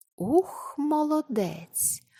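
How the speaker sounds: thrilled, admiring, delighted, high voice. Narrator reads an onlooker's thought as a girl crosses a slippery beam: delighted. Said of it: "у захваті подумав Володя".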